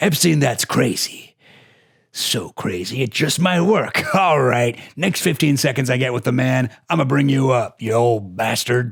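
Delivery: put-on pirate voice. Acting out Lynn Forrester replying to a pitch: Lynn Forrester impression. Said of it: "That's my Lynn Forrester impression".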